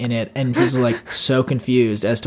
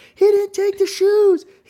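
put-on screaming, higher pitch. Retelling leaning out a window at night: retelling a scream. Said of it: "screaming like".

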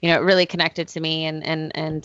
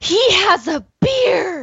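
very high, loud, swooping gasp of wonder; 6 dB louder than usual. Retelling someone's reaction to seeing Luke Skywalker at the film's end, imitating a loud gasp. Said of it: "she just gasps, like the most audible loud gasp I've ever heard, and goes".

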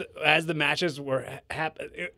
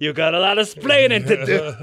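put-on Cuban-accented voice, higher and louder; 3 semitones higher, 8 dB louder than usual. Joking that a wrestling moment was a Ricky and Lucy situation: Ricky Ricardo voice. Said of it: "a real, uh, Ricky and Lucy situation".

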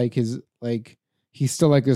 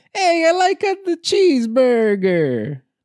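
mock American accent with Italian flavor; 13 semitones higher, 3 dB louder than usual. Joking about italian actors playing americans: mock italian take on american accent. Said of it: "That's their American accent".

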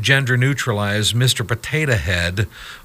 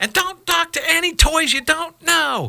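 very high, screamed yell. Recounting her packing him off, imitating Mrs. Potato Head screaming out. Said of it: "she screams out at him".

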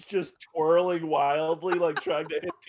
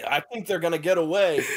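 usual speaking voice

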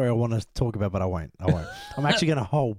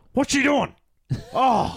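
very high, loud hollering; 13 semitones higher than usual. Retelling a dad at a horror movie: imitating a dad yelling. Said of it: "He used to yell like".

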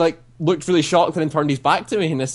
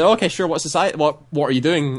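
ordinary delivery

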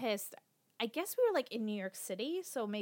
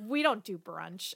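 put-on scornful laughing scoff. Recalling how one person laughed at another: mock scoffing laugh. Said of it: "laughed, scoffed, and just was like".

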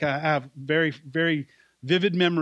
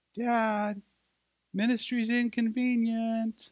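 put-on small, high little girl voice; 7 semitones higher, 4 dB quieter than usual. Speaker this morning retelling what his daughter said down the hallway, imitating a little girl's voice. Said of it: "I heard this little voice come down the hallway".

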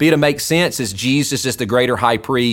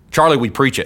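usual speaking voice

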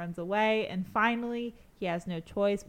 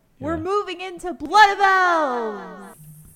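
very loud, very high excited shout, "elves" drawn out; 10 semitones higher, 12 dB louder than usual. Announcing the next book to discuss: raised excited voice. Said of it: "I can't avoid raising my voice for this".

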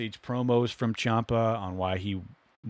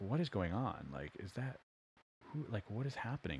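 faint, very quiet commentator-style half-whisper; 13 dB quieter than usual. Retelling how the commentators reacted to a surprise: imitating commentators half-whispering. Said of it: "you could hear them kind of whispering, barely".

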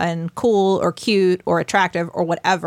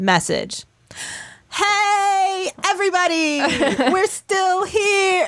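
put-on very high, slow, drawn-out shout; 12 semitones higher than usual. Retelling how she read out a group message: imitating someone shouting. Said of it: ""Why are you shouting?"".

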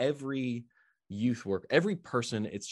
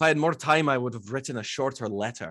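put-on Scottish-accented delivery; 3 semitones higher, 6 dB louder than usual. Asked to use a Scottish accent again, the speaker quotes a saying: Scottish accent. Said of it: "are you going to use a Scottish accent again?".

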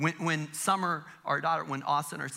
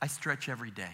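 put-on bone-dry deadpan, low and soft; 5 semitones lower, 6 dB quieter than usual. Retelling a 78-year-old mother's answer about her dancing, imitating mom's deadpan. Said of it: "in the most deadpan voice".

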